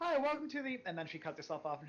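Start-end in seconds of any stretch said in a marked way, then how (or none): 0.0-0.8 very high, chirpy stock game-character voice. Voicing an innkeeper greeting the party as they enter: [name]'s instant NPC-style greeting. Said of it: "very N P C response of [name]".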